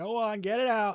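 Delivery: very high bellowed yell. Feeling mocked over their writing, the speaker lets loose on stream: yelling. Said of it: "I'm yelling now".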